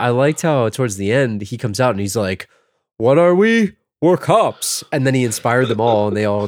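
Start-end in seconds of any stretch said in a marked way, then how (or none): 3.0-4.8 slow, pitched-up, drawn-out rousing delivery. Retelling a movie scene where the lead rallies the cops: Peter Weller impression. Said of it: "you sound just like him".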